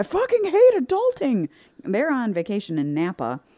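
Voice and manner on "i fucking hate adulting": put-on very high, shrill, swooping, frantic freak-out. Retelling calling their parents after getting home, retelling freaking out. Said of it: "I'm like freaking out".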